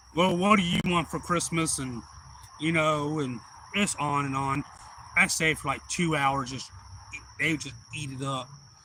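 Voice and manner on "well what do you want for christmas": raised, booming put-on character voice. Retelling chatting during a special visit where he changed his voice, in a Santa voice. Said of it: "just changed my voice and kind of went into the character of Santa".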